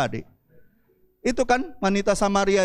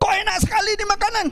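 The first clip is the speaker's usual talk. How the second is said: high, shouting, mock-angry voice. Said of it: "terus dia marah-marah?".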